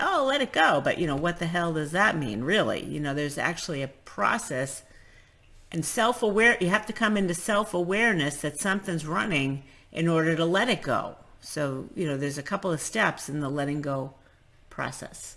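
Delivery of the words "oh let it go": high-pitched, flippant, dismissive delivery. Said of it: "people will just kind of flippantly say".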